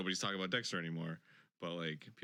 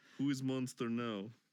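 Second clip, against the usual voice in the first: put-on Russian accent; 3 semitones higher than usual. In a group bit about a solved mystery, one speaker uses a mock russian accent. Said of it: "The Russian".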